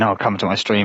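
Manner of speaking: ordinary talk, nothing marked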